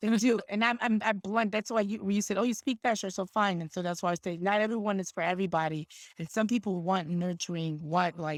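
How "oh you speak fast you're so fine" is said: ordinary delivery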